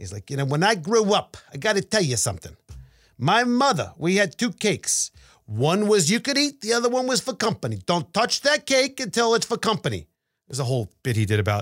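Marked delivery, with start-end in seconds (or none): 0.4-10.1 put-on rough-edged, harsh Brooklyn Italian accent, pitched up. Retelling a bit someone did about his mother: harsh brooklyn italian accent. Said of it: "he does his harsh, maybe a Brooklyn Italian accent".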